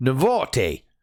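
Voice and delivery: bad, fake, put-on Australian accent. A crypto news host reading a company name in a piss-poor australian accent. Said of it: "That's my piss poor Australian accent".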